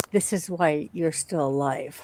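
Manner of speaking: soft, very hushed half-whisper, barely audible. Playing a character who leans in to Johnny: half-whispering in character. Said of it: "lean in and whisper to Johnny".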